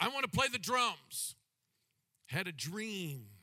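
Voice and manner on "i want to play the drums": proud, high-lifted, declaring delivery. Retelling answering a parent asking which instrument to play, retelling saying it proudly. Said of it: "I said it proudly".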